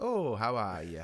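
soft, put-on Northern accent. Describing an old shopkeeper character in a film: soft Northern Peter Cushing voice. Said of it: "he talks very soft".

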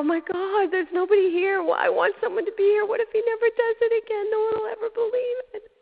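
overwhelmed, tearful crying voice, very high and loud. A mother recalls her son hugging her, retelling her own crying. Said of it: "I'm crying, and I'm going".

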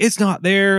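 high-pitched, very upset, worked-up, frantic voice. Retelling what an upset visitor said at the cubicle: imitating someone freaking out. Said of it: "just freaking out".

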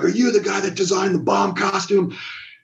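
high-pitched, furious, in-your-face scream. Retelling how Mister Perfect screamed in his face: imitating someone screaming. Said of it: "he got in my face screaming".

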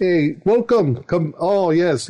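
put-on eastern European accent. Describing how two characters talk, the speaker demonstrates a put-on Eastern European accent. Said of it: "They talk like this".

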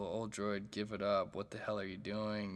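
ordinary talk, nothing marked

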